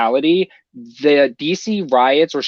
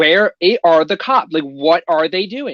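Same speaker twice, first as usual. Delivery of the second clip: livid, heated, furious ranting outburst; 4 semitones higher than usual. Retelling how parents reacted to the news: imitating someone screaming angrily. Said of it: "screaming at the television, like".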